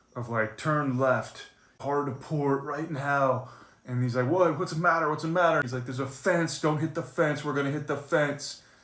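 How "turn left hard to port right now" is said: mock very slow, stretched-out shouting. Retelling the man steering the boat yelling to another man aboard, mock yelling. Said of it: "starts yelling".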